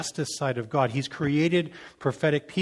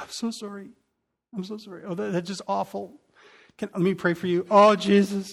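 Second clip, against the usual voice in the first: put-on high, weepy, tearful crying voice; 6 semitones higher than usual. Acting out a merciful visitor who starts crying: imitating someone crying. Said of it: "and they start crying".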